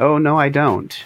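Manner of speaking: put-on English accent, pitched a touch high. Telling how Kurt answered when asked how he handles comments: Kurt's English accent. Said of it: "Kurt in his wonderful English accent said".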